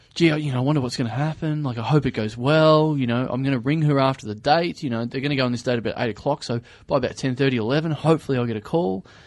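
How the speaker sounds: plain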